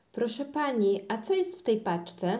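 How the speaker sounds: plain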